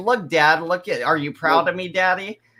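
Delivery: mocking, mimicking put-on voice. Imitating the son showing his dad a picture: mocking imitation of the son. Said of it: "sent it to you like".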